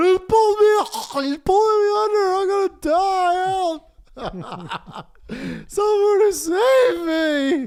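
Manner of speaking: put-on, very high, very slow, drawn-out crying, pleading whine. Retelling a friend stuck on a rock in rushing water: imitating someone crying for help. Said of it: "He was crying like a bitch".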